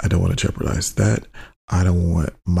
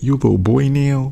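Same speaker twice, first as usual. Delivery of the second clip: put-on LA accent, higher and faster; 7 semitones higher than usual. Quoting what Pandora said, taking her part, imitating Pandora's LA accent. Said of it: "In that damn LAS accent".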